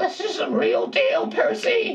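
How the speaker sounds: very high but serious, grave voice. Recreating a serious monologue line addressed to Percy, imitating serious Grover voice. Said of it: "be like his Grover voice. But serious".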